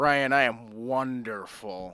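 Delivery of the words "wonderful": indulgent heavy stress on wonder in wonderful. Answering when asked how he is: heavy stress on wonder in wonderful. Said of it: "I put stress on wonder".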